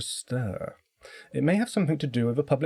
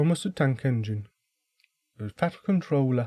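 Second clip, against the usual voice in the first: failed, inaccurate attempt at a Liverpool accent. After one failed try, the speaker attempts it again in a failed Liverpudlian accent. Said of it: "I can't do a Liverpudlian accent".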